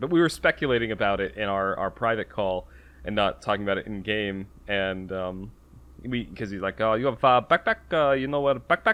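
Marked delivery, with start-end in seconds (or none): 6.8-8.9 heavy, thick put-on French accent, pitched up. Retelling what someone in the game asked the group, fairly thick foreign accent. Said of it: "he had a fairly thick accent. I think it was French".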